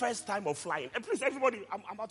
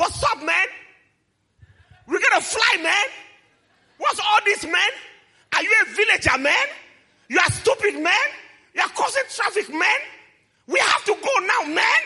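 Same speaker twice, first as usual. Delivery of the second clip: piercing screaming, very high and very loud; 12 semitones higher, 9 dB louder than usual. Retelling screaming at a guy who came close, retelling own screaming. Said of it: "I started screaming".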